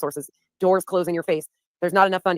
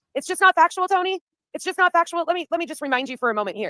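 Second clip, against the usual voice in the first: shouting, higher; 11 semitones higher than usual. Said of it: "This is where I'm yelling".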